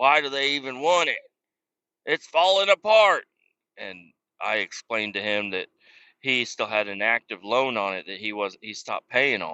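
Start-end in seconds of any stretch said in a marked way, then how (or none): 0.0-3.3 play-acted ranting yell, raised and loud. Retelling what a man yelled about the car: imitating someone yelling. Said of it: "He was just yelling about the car".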